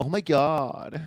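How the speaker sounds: put-on very high, loud, cliché California valley-girl gush. Describing the cliché California girl, in a valley-girl voice. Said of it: "When I think California, I think cliche Bay girl. Oh my God, that kind of voice".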